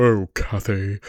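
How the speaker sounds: deep voice dropped very low, held down. Imitating an audiobook reader voicing Heathcliff, in a very low Heathcliff voice. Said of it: "she would lower her voice really low".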